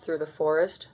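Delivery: ordinary delivery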